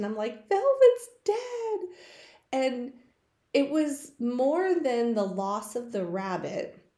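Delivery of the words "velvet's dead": very high, loud, hysterical and upset outburst. Retelling telling Mom the rabbit died: imitating own hysterical voice. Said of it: "I'm just hysterical".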